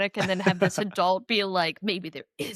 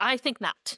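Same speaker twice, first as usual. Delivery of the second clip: put-on impatient, brushing-off tone; 4 semitones higher than usual. Acting out a character turning down someone staying: putting on old impatience. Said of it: "with the touch of his old impatience".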